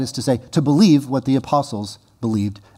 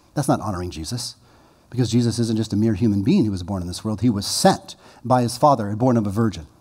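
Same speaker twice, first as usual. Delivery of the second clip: ordinary talk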